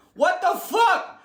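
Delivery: put-on very high, squeaky voice. Showing his laughing-guy bit to a co-host, in his obscure high voice. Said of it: "I come with the obscure high voice".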